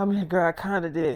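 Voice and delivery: put-on out-of-breath, breathless voice. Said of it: "why you sound like you just ran a fucking marathon".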